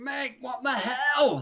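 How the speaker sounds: aghast cry with stretched-out hell. Retelling what a teammate shouted in horror: imitating someone shouting. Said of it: "and just shouted".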